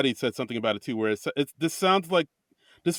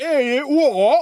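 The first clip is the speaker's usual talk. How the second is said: put-on very high, loud, hammy, camera-mugging British accent; 11 semitones higher, 7 dB louder than usual. Describing people mugging for the camera, the speaker mimics their British accents. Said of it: "mugging for the camera in British accents".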